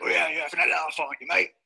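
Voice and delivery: put-on London tough-guy voice. Showing the takeaway food he buys, talking to his audience: Phil Mitchell voice. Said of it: "I just sound like Phil Mitchell from EastEnders".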